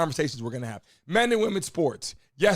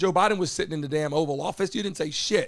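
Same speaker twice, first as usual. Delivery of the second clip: ordinary talk, nothing marked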